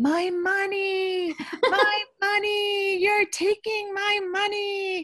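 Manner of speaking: acted, very high, shrill child's wail, "money" drawn out. A parent retells their son's outburst in a grocery store, imitating a child screaming. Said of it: "And he starts screaming".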